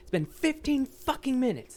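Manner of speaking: put-on, very high screamed outburst. Retelling screaming back at impatient restaurant customers: imitating someone screaming. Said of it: "I would start screaming back".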